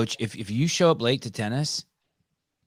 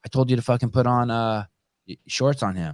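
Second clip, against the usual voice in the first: normal talking voice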